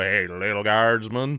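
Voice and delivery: slow, drawn-out western cowboy drawl. Imagining a line in a Western about a guardsman: John Wayne voice. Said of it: "John Wayne or someone's gonna come and go".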